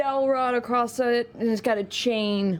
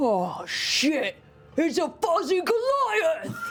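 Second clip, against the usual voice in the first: put-on high, drunken blurting voice; 9 semitones higher than usual. A player describes a drunk figure waking as his glasses come off, in a drunk voice. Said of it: "He's like drunk".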